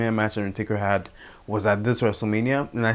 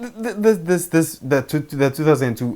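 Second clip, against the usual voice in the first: stammering, stuttering, much higher; 6 semitones higher than usual. Recounting a 2002 rivalry and tripping over his words, stammering. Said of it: "I'm stammering".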